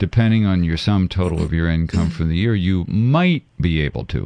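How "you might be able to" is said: might leaned on and set apart. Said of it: "underline the word might".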